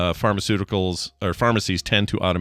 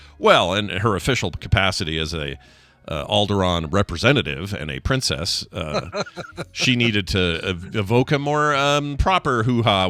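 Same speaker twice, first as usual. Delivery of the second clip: usual speaking voice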